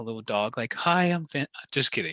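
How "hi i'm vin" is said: mock shy voice, higher. Retelling how a shy wedding guest introduced himself: imitating a shy greeting. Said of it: "all, like, shy, like a little dog".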